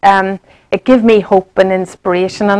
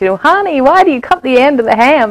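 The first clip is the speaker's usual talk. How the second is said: put-on American accent, higher pitch; 5 semitones higher than usual. Retelling a story, the speaker quotes a husband asking his wife, american accent. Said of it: "in his American accent".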